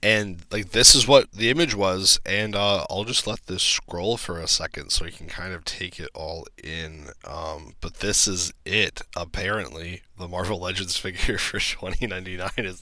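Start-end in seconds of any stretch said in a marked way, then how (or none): 10.2-12.8 giggling and laughing through the words. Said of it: "I'm sorry for laughing".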